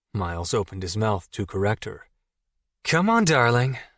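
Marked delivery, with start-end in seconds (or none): 2.8-3.7 put-on raised, effeminate voice. The narrator puts an arm around Miles and speaks in a more effeminate voice. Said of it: "in a more effeminate voice".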